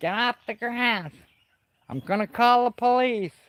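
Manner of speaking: put-on very high-pitched, grumpy, cranky old-man voice. Recalling an old man who chased people off the grass, imitating an old man. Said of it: "And he'd be like".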